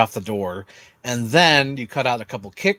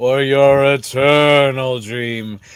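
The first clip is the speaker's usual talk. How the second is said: loud, very slow voice, every word drawn out; 5 dB louder than usual. Imitating how a film character sounds: Courage the Cowardly Dog mummy voice. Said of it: "That's how she sounds like".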